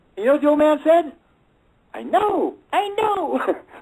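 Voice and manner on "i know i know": very slow, high, silly put-on goofy voice. Retelling what the old man said to him, in a goofy voice. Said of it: "Just like that, a goofy voice".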